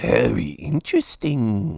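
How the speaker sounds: plain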